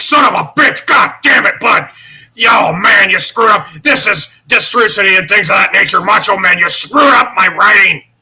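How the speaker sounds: loud, high ranting yell. Retelling a wrestling story, imitating Vince McMahon. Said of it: "Vince is like".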